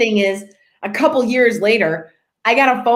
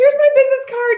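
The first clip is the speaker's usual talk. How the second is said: put-on trembling, very high-pitched, flustered, nervous voice. Retelling handing over a card to an angry officer: retelling own shaky nervous words. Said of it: "I'm shaking".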